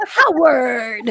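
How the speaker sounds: acted, stern, firm, commanding one-word authoritative voice. Repeating how she said the name Howard, imitating her authoritative tone. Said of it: "It's how she said it with authority".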